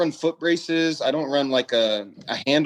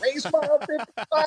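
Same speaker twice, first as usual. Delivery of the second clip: very high, all-out scream, radio-filtered sound; 13 semitones higher than usual. Speaker re-enacts himself calling out on the race radio, retelling his screaming. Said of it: "Wes is screaming at him like".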